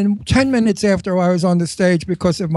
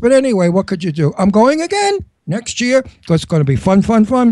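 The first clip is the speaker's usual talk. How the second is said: usual speaking voice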